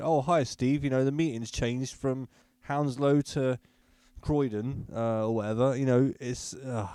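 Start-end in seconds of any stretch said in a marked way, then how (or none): none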